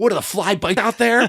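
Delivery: play-acted piercing, very high baseball-coach holler. Retelling how a baseball coach yelled at him in the field: imitating a coach yelling. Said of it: "My coach is yelling".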